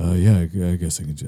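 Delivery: horrible, hesitant, halting put-on celebrity voice. Recalling an actor's Seinfeld role: horrible Patrick Warburton impression. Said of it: "I'm doing a horrible impression".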